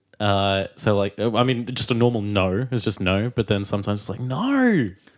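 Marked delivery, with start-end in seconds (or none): 4.2-4.9 overdone, very high Australian accent on no. Asked to show how the word sounds: exaggerated Australian "no". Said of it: "slightly exaggerate the "no"".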